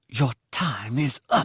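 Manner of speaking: hissing. Narrator reads a woman's line to the narrator after she demanded an answer: hissed. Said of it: "she hissed".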